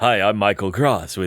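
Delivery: silky, smooth, velvety radio announcer voice. Retelling someone at a booth as the time starts: imitating Michael Cross's radio voice. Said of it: "he turns on the radio voice".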